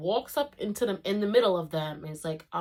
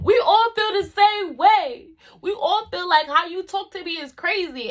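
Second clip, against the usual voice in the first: mock, shrill, booming, very loud high-pitched angry rant; 13 semitones higher, 10 dB louder than usual. Retelling a classmate going off at the whole class, mimicking him going off. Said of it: "as he's going off".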